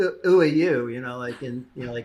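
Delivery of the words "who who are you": put-on loud, high-pitched British accent, shouted. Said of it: "like British accents".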